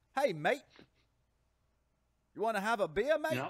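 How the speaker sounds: very loud, very high put-on Australian accent, New York showing. Joking that every impression still sounds New York, trying an attempted Australian accent. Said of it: "I'll do like an Australian".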